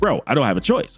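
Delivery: normal talking voice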